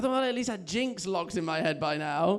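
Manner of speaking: plain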